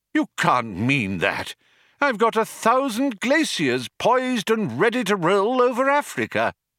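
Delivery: appalled, aghast outcry, very high-pitched and rising. Slati Bartfast responds to the mice's news: crying out, aghast. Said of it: "cried Slati Bartfast, aghast".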